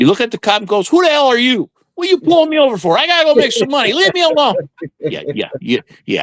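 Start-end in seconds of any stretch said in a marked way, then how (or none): 0.9-4.5 acted very high, rude, belligerent rant. Explaining traffic stops, acting out a driver talking to a cop, mock-rude. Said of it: "you're not going to get very far with that attitude".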